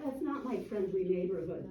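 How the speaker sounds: usual speaking voice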